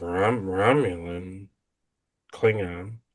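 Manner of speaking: slurred, slurry delivery, words smeared together. Imitating how she says the words: slurred tone. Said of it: "she kind of says like in a, like a slurry tone".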